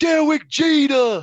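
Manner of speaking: very high, loud hype shout. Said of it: "he's just like".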